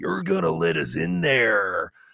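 deep, dropped-way-down brute voice. Describing ripping off his shirt to get past security: Hulk voice. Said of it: "I should probably not do that voice".

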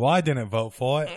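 put-on English accent. Quoting a line while talking about a vote, in a Monty Python English accent. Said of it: "did you do like English?".

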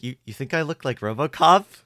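put-on flattered voice. Recapping a scene where Spruce calls Corbett RoboCop, Corbett, mock-flattered. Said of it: "Flattered voice".

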